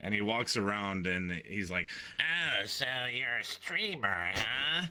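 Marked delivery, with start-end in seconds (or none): 2.2-4.9 slow, stuffy-nosed drawl, little gremlin voice. Imitating a stream sniper walking up to streamers: imitating a gremlin voice. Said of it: "this little gremlin voice".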